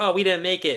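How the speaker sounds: high, whiny, mock complaining tone.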